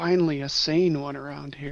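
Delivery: quiet aside muttered under the breath. Voicing a character speaking to Jarl: muttered under breath. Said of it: "under my breath".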